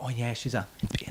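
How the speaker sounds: secretive, hushed half-whisper, word swallowed. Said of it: "'Cause they go".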